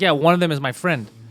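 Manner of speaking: ordinary talk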